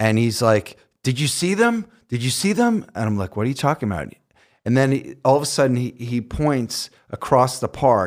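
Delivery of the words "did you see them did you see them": mock frantic, upset, very high-pitched, rising. Retelling a park encounter, imitating a man who ran over frantic and upset. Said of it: "He's just really frantic and upset".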